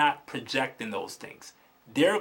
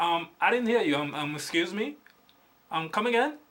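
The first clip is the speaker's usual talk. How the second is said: put-on confused, puzzled voice; 4 semitones higher than usual. Acting out the girl behind the register answering a customer, imitating a confused cashier. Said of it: "the chick behind the register would be like".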